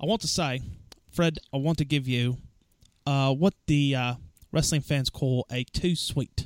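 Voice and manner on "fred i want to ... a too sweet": attempted British accent that sounds more Australian. Trying to pull off a British accent, addressing Fred: attempted British accent, sounding Aussie. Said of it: "That was more Aussie".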